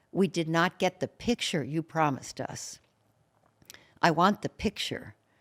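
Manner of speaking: pushy, ugly, aggressive, demanding insistence. Speaker retelling a woman's demand to Mother Teresa, imitating a loud, ugly voice. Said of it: "the woman said in a loud, ugly voice".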